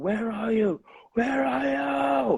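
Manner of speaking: high, slow, desperate scream, are stretched long. Retelling the first phone call after mom died: retelling own screaming. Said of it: "I screamed".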